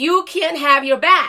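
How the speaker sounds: acted-out mild scolding yell. Retelling what the gate lady screamed while running: imitating someone screaming. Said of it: "starts screaming at me".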